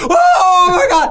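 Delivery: high, loud, slow terrified scream.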